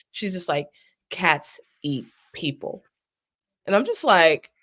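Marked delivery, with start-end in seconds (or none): 1.1-2.8 mock straight-faced, hushed, breathy whisper. Retelling what a kindergartner said with a straight face: imitating a deadpan kindergartner. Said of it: "just a straight face".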